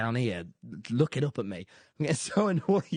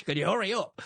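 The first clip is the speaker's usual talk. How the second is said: impatient shouting, pitched up; 5 semitones higher than usual. Retelling a phone call to friends while stuck waiting: imitating own shouting. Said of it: "shouting at you".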